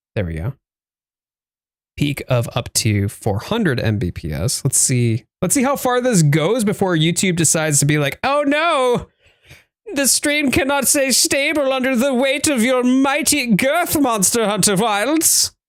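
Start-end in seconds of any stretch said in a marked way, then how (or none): 8.3-15.5 really fake, very high-pitched German accent. Voicing YouTube complaining about the stream: fake German accent. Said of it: "really fake German accent".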